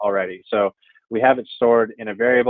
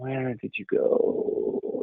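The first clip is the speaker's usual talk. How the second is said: hushed, slow, drawn-out, whispered fake cartoon French accent; 8 dB quieter than usual. Teasing a video character while narrating a screen demonstration to viewers, calling out to him in a French cartoon accent. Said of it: "That was that accent".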